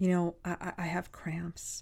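barely voiced, soft, slow, halting, drawn-out speech. Retelling how students come up to a teacher: imitating students speaking very low. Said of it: "they're really low".

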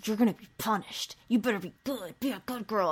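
put-on threatening whisper. Retelling a man whispering to a nervous little girl out of her mother's earshot: retelling a threatening whisper. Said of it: "And he's whispering in her ear".

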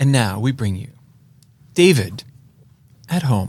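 very gentle, mild announcer voice. Pitching a new show segment intro to co-hosts, very gentle announcer voice. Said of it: "a very gentle voice in, introduces it like this".

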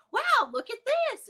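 mock cheerful and soothing, very high, bright. Speaker retells calming him after a fall without picking him up: put-on happy voice. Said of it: "Like in a happy voice".

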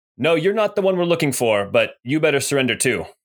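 loud call from a distance. Voicing a hidden figure calling out to the party: calling out from the shadows. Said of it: "he calls out".

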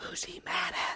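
hushed, very soft, barely audible whisper. Retelling what he whispered to his mom during a sermon: imitating a whisper. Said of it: "leaned over to her and whispered".

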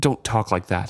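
said roughly. Reading a sailor's reply to the ship's warning: said roughly. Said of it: "he said roughly".

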